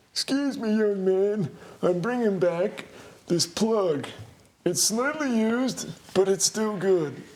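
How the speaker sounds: put-on elderly man voice, pitched very high. In an improvised bit with a co-host, playing a store customer, old man voice. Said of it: "I have to do the voice now".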